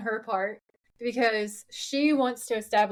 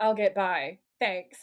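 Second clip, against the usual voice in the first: snarky, curt, dismissive tone; 3 semitones lower than usual. Retelling a TV scene where Dean replies to Renee: imitating Dean with attitude. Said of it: "the attitude that he gives back".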